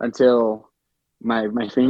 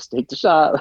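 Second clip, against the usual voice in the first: mock pressing, desperate, urgent push; 3 semitones higher than usual. Speaker imitates the listener calling out ranges, mimicking desperate urging. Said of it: "I could hear the desperation in your voice too".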